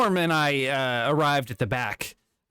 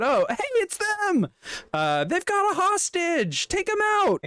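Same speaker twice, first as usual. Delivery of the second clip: very high, animated, swooping call-out. Voicing cops who spot the group breaking out the door: cops calling out. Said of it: "as they call out".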